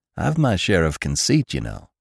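ordinary delivery, nothing marked

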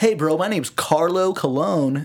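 put-on hardcore, laid-on, over-the-top American accent. Retelling how Carlo introduced himself: Carlo's hardcore American accent. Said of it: "he would do like a hardcore English, like American accent, like".

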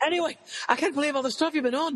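very high, put-on, attempted Scottish accent. Retelling a DM from a fan from Scotland: attempted Scottish accent. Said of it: "I could listen to the rest of the interview with that accent".

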